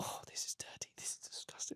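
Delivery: very hushed, repulsed, disgusted whisper under the breath. Recounting words spoken through her own mouth during an ayahuasca experience: retelling a whisper. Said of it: "I'm whispering it to myself".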